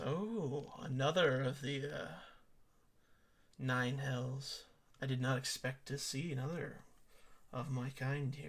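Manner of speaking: slow demon woman character voice. Voicing an unseen voice speaking from everywhere in a tomb: voicing a succubus. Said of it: "And she just goes".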